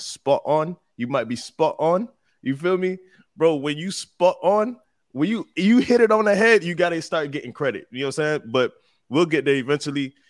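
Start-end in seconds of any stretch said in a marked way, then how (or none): 0.0-0.8 practised put-on London accent, pitched up. Speaker does the only line they know in a London accent. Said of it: "I'm gonna do the only line that I know how to do in my London accent".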